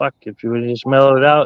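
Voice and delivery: ordinary talk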